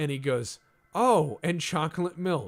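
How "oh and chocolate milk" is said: play-acted very loud, high, cheerful happy-kid voice. Acting out a kid who replicates food and drinks: acting out a happy kid. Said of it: "and he's all happy".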